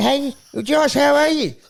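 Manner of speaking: high, loud, called-out yell. Complaining he must hunch over to reach the camera, the speaker demonstrates yelling a greeting. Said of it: "yelling like this".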